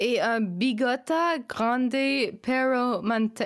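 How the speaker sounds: put-on French accent on Spanish words. Speaker reads a Spanish phrase aloud, reading Spanish in a French accent. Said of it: "You're reading Spanish in a French accent".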